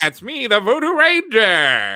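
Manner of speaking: very high, sing-song, swooping mascot voice. Voicing the beer's mascot for friends, in a Voodoo Ranger voice. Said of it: "Is that how the Voodoo Ranger talks?".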